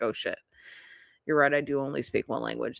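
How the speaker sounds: acted-out sheepish, embarrassed, caught-out sudden realization. Acting out the reply of a person who was just roasted: imitating someone embarrassed. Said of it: "is a little bit embarrassed".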